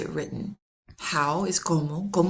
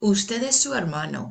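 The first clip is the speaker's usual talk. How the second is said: hermano said flat, with level statement tune; 3 semitones higher than usual. Demonstrating Spanish intonation to learners, saying a sentence with plain statement intonation. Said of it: "That's a statement".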